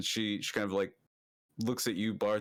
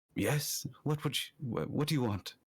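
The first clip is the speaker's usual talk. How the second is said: faintly feminine, somewhat womanly voice with higher pitch; 5 semitones higher than usual. Voicing someone behind a monastery door slot: somewhat feminine voice. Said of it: "this somewhat feminine voice".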